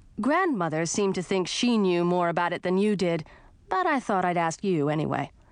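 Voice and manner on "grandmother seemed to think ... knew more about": plain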